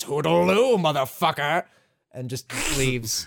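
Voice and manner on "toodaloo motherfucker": villainous, tossed-off villain voice. Imitating Wesker leaving after throwing a virus: Wesker impression. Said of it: "Papa Wesker. Right before he throws a fucking virus against the wall and says".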